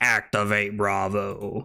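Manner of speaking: cool deep robot voice. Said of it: "Optimus Prime being like".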